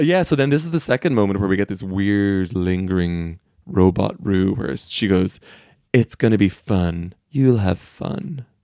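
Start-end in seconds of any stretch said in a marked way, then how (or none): 5.9-8.4 mock menacing tone. Retelling a tv character speaking to a contestant's sister: mock-menacing. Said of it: "She says menacingly".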